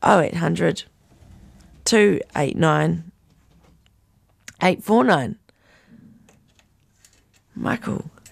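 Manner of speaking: croaky, hoarse voice. Reading out a phone number on the radio, croaky voice. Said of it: "Lovely croaky voice".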